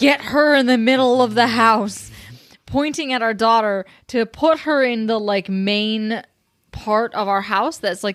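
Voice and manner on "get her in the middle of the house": loud, dramatic put-on shout. Retelling a partner spotting a fallen branch: imitating a dramatic shout. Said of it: "real dramatically shouts".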